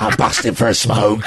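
low, rough geezer voice.

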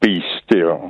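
put-on authoritative, commanding voice. Retelling what a voice in the head said: imitating an authoritative voice. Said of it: "very authoritative voice".

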